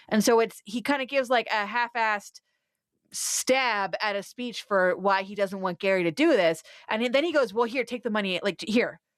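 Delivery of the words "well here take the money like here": put-on passive-aggressive tone. Retelling a show scene where a dad hands over money: imitating passive aggressive dad. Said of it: "he does a passive aggressive".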